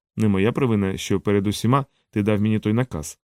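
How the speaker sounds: usual speaking voice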